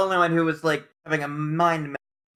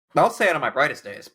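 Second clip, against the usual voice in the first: ordinary delivery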